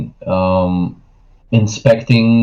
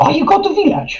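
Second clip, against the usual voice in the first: very high-pitched small creature voice. Voicing kobolds asking the players about the village: kobold character voice. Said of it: "They say".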